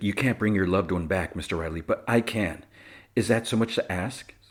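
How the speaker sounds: usual speaking voice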